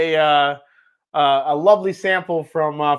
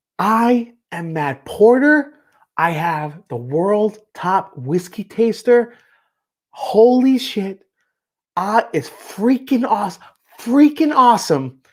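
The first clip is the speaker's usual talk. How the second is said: slow, deliberate, drawn-out put-on voice; 4 semitones higher than usual. Doing an impression of a whiskey taster praising his favorite bourbon: Matt Porter impression. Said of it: "that's my Matt Porter impression".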